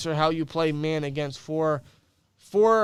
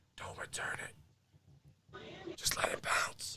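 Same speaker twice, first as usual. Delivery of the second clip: very slow, very hushed close whisper; 15 dB quieter than usual. Acting out advice into Gunner's ear before the kickoff: whispering. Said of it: "I'm just gonna whisper in Gunner's ear".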